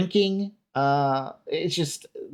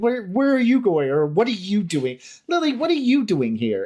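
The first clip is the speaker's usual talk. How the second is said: put-on bigger, higher, exasperated calling out; 6 semitones higher, 3 dB louder than usual. Retelling an actor's alternate take: imitating an exasperated line. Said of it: "exasperated with Lily".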